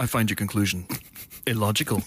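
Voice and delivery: flat low monotone. Arguing that playing a Spock is easy, then proving it: deadpan Spock monotone. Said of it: "repeat your lines in a sort of deadpan monotone".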